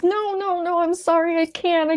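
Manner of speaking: put-on sobbing, very high-pitched, hysterical. Retelling stopping and refusing to go on, retelling hysterical crying. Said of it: "I'm hysterically crying".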